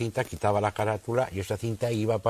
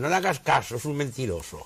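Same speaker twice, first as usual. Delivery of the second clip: put-on second voice, pitched up, called out lightly; 5 semitones higher than usual. Retelling a second recorded voice in the background: imitating a voice shouting. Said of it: "otra voz de fondo gritando".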